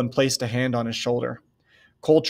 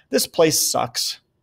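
words half swallowed, low mumble under the breath; 3 semitones higher than usual. Narrator reads a handcuffed man replying, mumbling. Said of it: "Cole mumbled".

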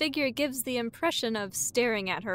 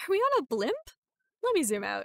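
very high, incredulous, pleased, delighted disbelief; 8 semitones higher than usual. Narrator reacting after the fish with legs calls out, incredulously pleased. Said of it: "(incredulously pleased)".

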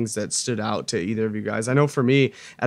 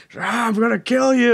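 put-on scream, much higher, louder, slower; 11 semitones higher, 4 dB louder than usual. Recapping a fight scene, retelling a scream. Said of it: "he's still just screaming".

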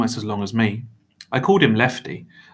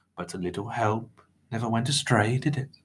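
plain

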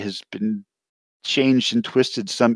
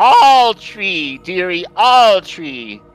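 real loud, high, very slow drawn-out yell; 8 semitones higher, 7 dB louder than usual. Playing a character who heckles everyone, yelling real loud. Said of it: "She yells real loud".

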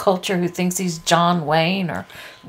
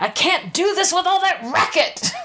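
acted-out shrieking scream, very high-pitched; 11 semitones higher than usual. Retelling a movie scene with men beating on the door, retelling a scream. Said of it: "and he screams".

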